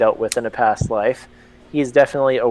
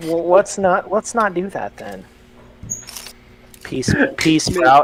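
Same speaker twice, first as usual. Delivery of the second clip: condescending, pitched-up, talking-down tone; 6 semitones higher than usual. A tabletop player's character answers another character's risky idea, condescending. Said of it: "He says condescendingly".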